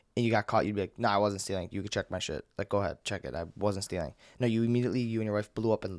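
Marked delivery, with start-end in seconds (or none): none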